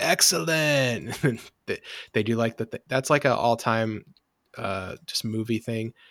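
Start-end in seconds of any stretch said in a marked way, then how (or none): 0.0-1.2 put-on high, slow surfer-dude stoner drawl. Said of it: "it has a great quote, you know, where it's".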